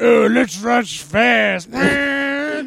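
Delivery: very slow, high, stretched-out drawl. Joking about a movie crossover with the others: Vin Diesel impression. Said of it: "your Vin Diesel impersonation".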